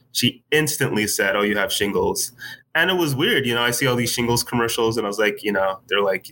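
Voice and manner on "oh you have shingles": normal talking voice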